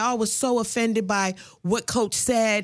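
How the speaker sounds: ordinary delivery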